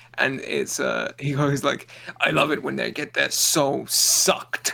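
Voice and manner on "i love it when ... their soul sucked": put-on enthusiastic character voice. Quoting a favourite line from a movie character: imitating Kabal with enthusiasm. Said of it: "you said it with a little too much enthusiasm".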